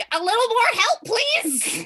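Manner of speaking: very high, loud yell. Shouting for help while grabbed by the legs: shouting for help. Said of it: "Do you shout or yell or anything?".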